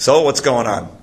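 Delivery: put-on gruff rough country accent. Retelling a story, a man asks traveling monks what's going on, in a gruff country accent. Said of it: "he says in a country accent".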